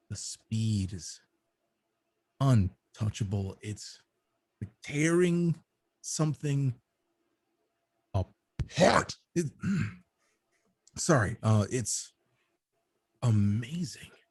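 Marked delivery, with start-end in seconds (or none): 0.1-9.1 slipping into a put-on wolf voice. A player's character talks outside the barracks, slipping into wolf voice. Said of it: "when you slip into wolf voice for a moment".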